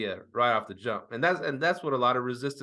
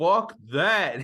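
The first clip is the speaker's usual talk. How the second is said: mock blunt, very loud, pitched-up outburst; 5 semitones higher, 5 dB louder than usual. Retelling a coworker's reaction to dropping cleaning fees: imitating a loud shout. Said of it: "and he's real loud".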